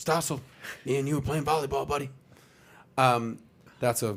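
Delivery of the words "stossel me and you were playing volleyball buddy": put-on whisper-shout. Imitating Biden challenging John Stossel to a push-up contest: imitating Biden's whisper shout. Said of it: "the whisper shot".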